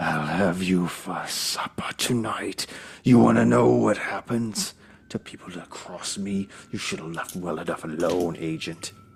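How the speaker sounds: guttural, hissing creature monster voice. Game master voicing a creature that swipes at a player's agent, hissing monster voice. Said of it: "hissing in your face".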